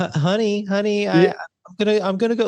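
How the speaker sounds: very high, sheepish, guilty, stumbling stammer. Retelling a film scene after an argument, imitating Eddie Murphy's guilty tone. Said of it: "Eddie Murphy's tone totally changes".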